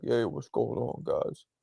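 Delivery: very soft, smooth, deep bedroom voice. Teasing Zoro about his deep voice: imitating Zoro's bedroom voice. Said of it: "it makes me feel like you're trying to bedroom talk me".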